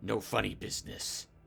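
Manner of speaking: growly, bear-like voice. A game master voices a hostile creature laying down warnings at the start of a wager. Growling bear voice. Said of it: "he growls".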